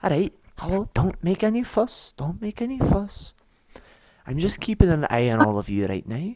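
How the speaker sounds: high half-whispered character voice, close and intimate. A character half-whispers to two people standing together in a town hall, half-whispering in their ears. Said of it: "hear like a whisper in your ears".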